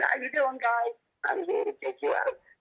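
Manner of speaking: very high, meek, subordinate little voice. Voicing how a dog might greet others in a doorway, in a high-pitched voice. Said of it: "with a high-pitched voice saying".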